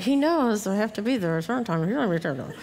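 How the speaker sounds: put-on grumbling under breath. Recalling her husband's request as she heads out, retelling muttering under breath. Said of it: "And under my breath".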